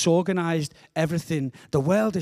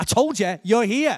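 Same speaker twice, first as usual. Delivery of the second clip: slightly impatient, pitched-up sat-nav voice; 5 semitones higher, 4 dB louder than usual. Retelling what the sat-nav said after retyping the postcode: imitating an impatient sat-nav. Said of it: "the sat-nav went a little bit more impatiently".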